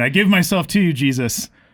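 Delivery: mock crazy, wild yelling in a high voice. Describing screaming on the Boise Greenbelt at night; retelling own screaming. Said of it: "I'm just screaming".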